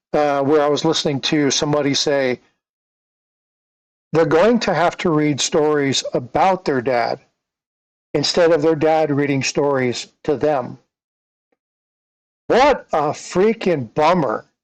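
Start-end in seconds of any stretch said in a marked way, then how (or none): none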